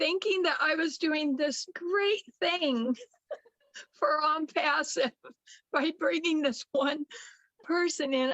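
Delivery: words broken up by laughs. Recalling bringing one person into on passive, laughing while talking. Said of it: "I'm sorry I'm laughing now".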